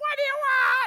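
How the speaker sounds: very high, very loud, shrill woman's voice, far from meek. Retelling a woman answering her door to a knock: imitating a far-from-meek woman's voice. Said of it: "it wasn't like a meek, quiet spirit voice coming back at me".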